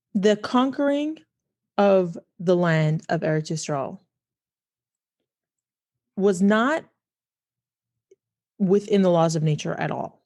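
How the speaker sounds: measured, unhurried, slow, deliberate delivery. Speaker explains a teaching to listeners, speaking slowly. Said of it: "I'm going to say this slowly".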